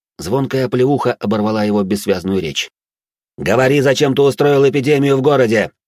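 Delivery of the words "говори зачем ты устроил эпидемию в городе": harsh, high-pitched bark. The narrator, interrogating the captive marquis de Bordeaux, barks at him. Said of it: "рявкнул я на де Бордо".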